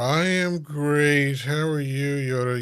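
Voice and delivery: mock glum, slow, downcast, gloomy delivery. Mocking another speaker's greeting back at them, in a mock-gloomy Eeyore voice. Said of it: "You sound like Eeyore".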